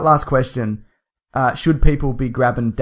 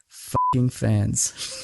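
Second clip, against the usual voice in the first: put-on mutter under breath, quieter; 6 dB quieter than usual. Retelling an autograph encounter, quoting a remark: imitating a muttered remark under breath. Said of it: "I heard him say under his breath".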